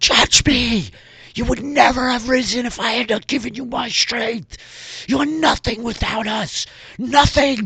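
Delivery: very high, shrill, furious screaming. Voicing a character screaming at a glowing portal: screaming in rage. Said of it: "screaming at it".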